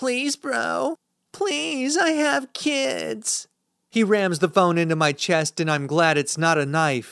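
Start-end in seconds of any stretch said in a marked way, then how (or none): 0.0-3.5 mocking plea, very high, slow and drawn out. Reading a story where the attacker mocks the narrator's plea: mocking high-pitched voice. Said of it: "With a mocking tone at least five octaves higher".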